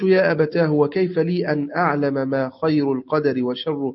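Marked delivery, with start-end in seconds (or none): none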